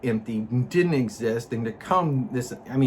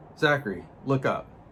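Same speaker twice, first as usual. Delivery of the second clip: normal talking voice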